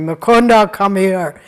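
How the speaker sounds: very loud, stern, commanding call. Retelling a guru calling his disciple from meditation: imitating a stern call. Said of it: "he called him very sternly".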